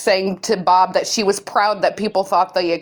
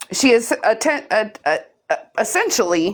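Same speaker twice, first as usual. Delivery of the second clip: stuttering and stammering, tripping over words. Walking through screenshots during a discussion, stuttering. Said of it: "sorry, I'm stuttering".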